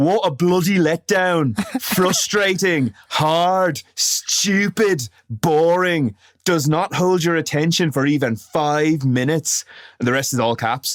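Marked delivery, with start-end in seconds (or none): 0.0-9.6 put-on English accent, lightly laid on. Reading out a review written by Mog, as Mog in a put-on English accent. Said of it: "I have to put on a bit of an accent for this because he sounds English".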